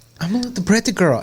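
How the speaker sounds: put-on Russian accent, pitched very high. Retelling a woman from an old viral video, imitating Tanya's Russian accent. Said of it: "Romanian type Russian accent".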